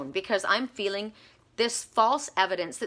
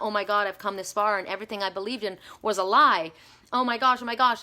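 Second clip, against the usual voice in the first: put-on panicked voice. Retelling waking up crying in bed: imitating own past panic. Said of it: "where you're having a panic attack".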